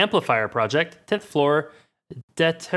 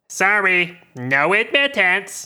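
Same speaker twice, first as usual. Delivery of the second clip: mechanical, squawking robot voice; 4 semitones higher, 3 dB louder than usual. Voicing a guard robot standing in the hallway, speaking to the players: squawking mechanical voice. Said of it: "Squawks its mechanical voice".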